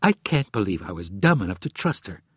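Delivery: ordinary delivery, nothing marked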